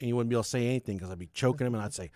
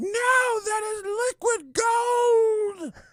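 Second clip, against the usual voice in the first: horrified scream, very high, very slow, drawn out; 6 dB louder than usual. Speaker retells a lactation consultant screaming at them: retelling a horrified scream. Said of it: "She just starts screaming like".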